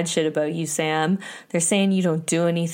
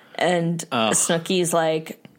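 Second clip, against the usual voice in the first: plain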